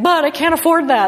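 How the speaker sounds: high, slow, worried pleading voice.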